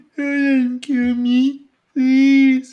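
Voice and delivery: spoken through a yawn. A character begs not to be killed: yawning while talking. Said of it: "He sounds like he's yawning".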